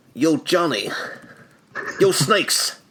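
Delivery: mobster-style mafia boss voice. Riffing on a partner's line during an episode, in a mafia boss voice. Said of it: "That sounded like a mafia boss".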